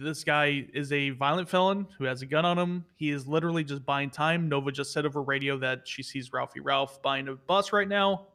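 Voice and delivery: ordinary delivery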